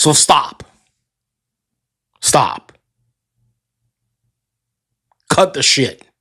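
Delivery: heated, fed-up, worked-up, deliberate delivery. Ranting about people's complaints, getting worked up. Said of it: "I got a little worked up".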